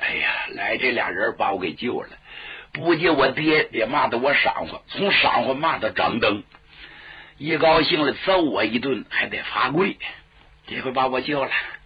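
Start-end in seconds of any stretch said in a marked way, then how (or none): none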